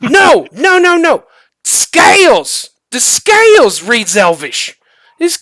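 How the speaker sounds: very slow, loud, high, drawn-out shout. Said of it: "they kinda shout back and forth".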